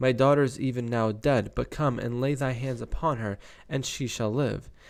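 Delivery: ordinary talk, nothing marked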